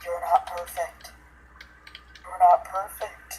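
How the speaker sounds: eerie, creepy, hushed, repeated whisper. Retelling what a blue CGI fetus creature kept saying: imitating a creepy whisper. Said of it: "it just kept whispering".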